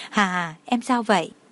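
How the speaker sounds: plain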